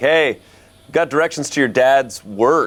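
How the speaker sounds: loud calling out across a distance. Playing a character who shouts out to Grace: shouting to someone in character. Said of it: "I probably will shout out to Grace".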